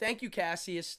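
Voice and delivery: ordinary talk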